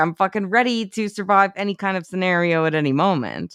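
ordinary delivery

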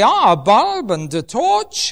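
attempted, put-on Dutch accent. Retelling how Corrie ten Boom used to show a torch: attempted Dutch accent. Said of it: "I can't do a Dutch accent".

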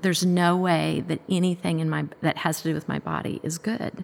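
normal talking voice

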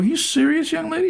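amazed, high voice.

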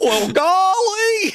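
very high Southern drawl with golly stretched out. Asked to do voices on the show, switching into a Gomer Pyle voice.

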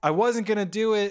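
put-on shout, high, held back, protesting tone. Retelling a film scene where a man protests his arrest: imitating someone shouting. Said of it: "when he's shouting".

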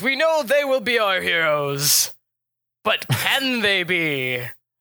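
slow, puffed-up, self-important, pompous voice. Voicing a man at a gathering who questions the heroes: pompous man voice. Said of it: "the big pompous man from last night".

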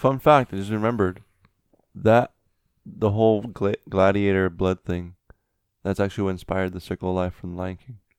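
casual, matter-of-fact, nonchalant deadpan delivery. Telling others a made-up fun fact: nonchalant deadpan. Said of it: "you said it nonchalant".

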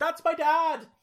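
high-pitched, loud shouting. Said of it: "where he's just shouting".

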